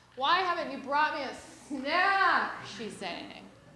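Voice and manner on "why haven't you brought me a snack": put-on loud, high-pitched, demanding, entitled whine. Retelling a daughter playing at calling a servant: imitating whining. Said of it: "I can't tolerate that whining".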